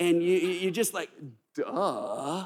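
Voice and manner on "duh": duh in Californian valley accent. Leading a group to say the word duh, californian accent on duh. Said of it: "you have to say it like you're from California".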